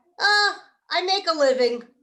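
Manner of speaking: put-on good Yiddish accent. Telling a joke, the hospital patient answers the nurse, Yiddish accent. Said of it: "you did a good Yiddish accent".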